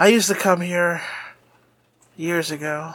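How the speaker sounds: somber, edgy, brooding, pained voice. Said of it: "in his real, um, sombering, uh, edgy way".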